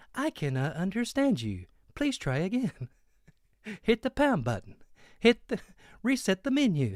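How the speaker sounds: high, sing-song female AI phone-menu voice. Retelling a call where the ai answers: imitating a woman ai. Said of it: "every time I say it".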